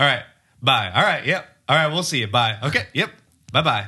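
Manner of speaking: loud, high voice, repeated over and over. Imitating dad saying goodbye on the phone: imitating a long phone goodbye. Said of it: "when he says goodbye on the phone, it's hilarious".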